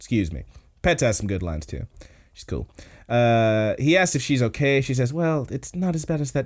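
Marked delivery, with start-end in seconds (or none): 5.1-6.5 put-on delicate, dainty little flower-girl voice. Retelling an anime scene, quoting a girl: imitating a little flower girl voice. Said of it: "her voice changes too. She's, like, talking like she's, like, you know, such a little flower girl".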